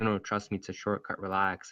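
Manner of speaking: normal talking voice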